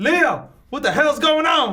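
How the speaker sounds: high-pitched scream projected over a distance. In a role-play, calling out to leo from the other side, screaming. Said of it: "And I'm screaming at you from the other".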